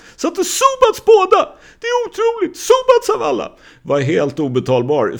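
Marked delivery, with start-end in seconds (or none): 0.2-3.5 much higher, louder disbelieving scream. Retelling how a friend reacted when told of the free throws, retelling a disbelieving scream. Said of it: "när han skrek Subac!".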